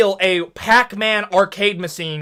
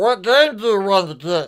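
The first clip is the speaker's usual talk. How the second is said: put-on elderly man's voice. Retelling an old guy at a local Walmart, impression of an old guy. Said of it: "S0: like".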